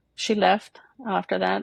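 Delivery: ordinary talk, nothing marked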